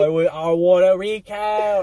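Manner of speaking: put-on Boston politician voice and accent. Demanding a recount in an impression. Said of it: "I was gonna go to J F K".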